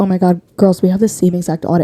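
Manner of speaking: ordinary delivery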